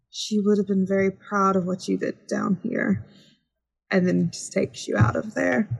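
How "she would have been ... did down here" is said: gentle, comforting, consoling tone. Game narrator voicing a woman helping Dupois up, speaking quietly. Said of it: "she just quietly says".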